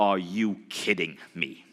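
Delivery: slow, really intense stern voice. Retelling how a mentor reacted to a small profit: intense Bob Proctor voice. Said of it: "this really stern face and this really, really, like, intense voice".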